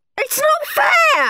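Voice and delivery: very high, loud, piercing shriek. Horrid Henry, after Bert won't make his, shrieking. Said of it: "shrieked Horrid Henry".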